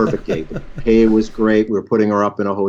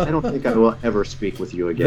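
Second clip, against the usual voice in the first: usual speaking voice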